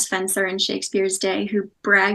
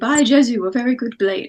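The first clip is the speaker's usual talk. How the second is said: mocking put-on upper-class accent; 2 semitones higher, 4 dB louder than usual. Showing how an actor would have said the line: put-on upper-class accent. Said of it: "would have put on like that accent".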